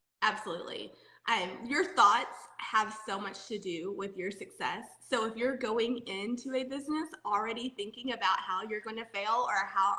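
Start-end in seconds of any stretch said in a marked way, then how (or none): none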